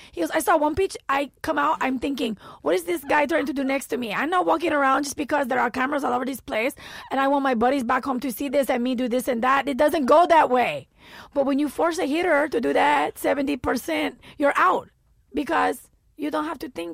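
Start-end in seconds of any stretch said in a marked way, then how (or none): 0.3-10.8 put-on Dominican accent, higher and louder. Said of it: "please forgive my Dominican accent".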